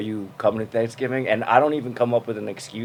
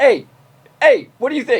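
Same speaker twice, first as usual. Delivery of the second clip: very high, loud shouted call-out; 13 semitones higher, 7 dB louder than usual. Retelling how relatives call out a name: imitating family shouting a name. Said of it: "they shout your name, they're like".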